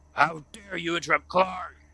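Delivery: angry yell.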